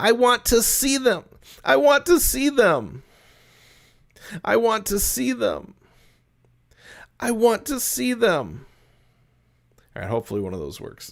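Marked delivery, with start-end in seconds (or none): 0.0-8.6 put-on childlike voice, very high. A child in the story asks to see his parents: kid's voice. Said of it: "trying to go like a kid's voice".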